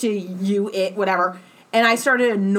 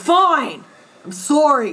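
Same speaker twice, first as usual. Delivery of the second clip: put-on grudging, fed-up tone, pitched higher; 5 semitones higher, 4 dB louder than usual. Describing the end of a two-hour argument, imitating a guy's fed-up apology. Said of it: "where the guy's just wants the argument to stop".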